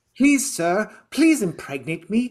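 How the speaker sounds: mock naive childlike pleading tone. Retelling a film character's plea: imitating a naive childlike plea. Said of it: "is like a naive child who's like".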